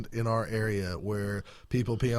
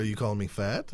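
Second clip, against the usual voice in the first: normal talking voice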